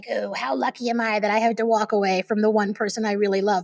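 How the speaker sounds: heavy, sardonic, mocking sarcastic tone, acted out. Recalling what one used to say to oneself, acting out past sarcasm. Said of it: "I would sort of be all sarcastic, like".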